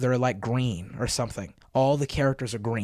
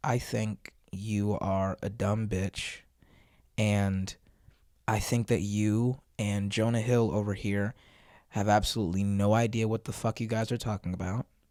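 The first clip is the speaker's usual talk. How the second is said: very calm, unruffled, flat deadpan monotone; 3 semitones lower than usual. Imagining what this guy might say to the others, imitating a calm monotone. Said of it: "just in his very calm, monotone voice".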